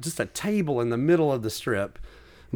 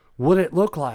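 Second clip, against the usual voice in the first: mock very serious, dead-serious tone; 3 semitones higher than usual. Retelling the stranger leaning in to ask: imitating a very serious tone. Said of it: "so serious".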